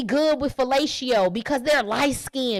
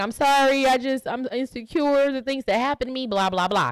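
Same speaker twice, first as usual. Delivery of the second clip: mock crying, tearful put-on voice. Retelling a scene from a show where she breaks down: imitating someone crying. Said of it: "She's crying. She's like".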